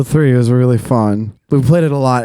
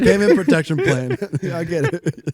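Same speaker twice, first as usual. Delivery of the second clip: soft giggling through the words, swooping pitch; 4 semitones higher, 5 dB quieter than usual. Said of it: "I can't stop laughing".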